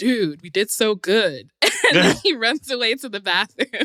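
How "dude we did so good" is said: slow, stretched-out, laid-back chill bro voice. Speaker describing Drew retreating into bro mode after a performance, in Drew's bro voice. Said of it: "Did you like my bro voice?".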